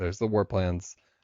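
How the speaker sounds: plain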